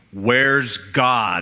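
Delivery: deep, preacher-like voice. Telling a story, the speaker quotes a preacher questioning an 8-year-old, deep booming voice. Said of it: "in a deep booming voice".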